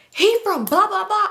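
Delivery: very high, loud, top-of-lungs shriek. Retelling what a girl said while the speaker was driving, retelling a girl screaming. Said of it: "screaming to the top of your lungs".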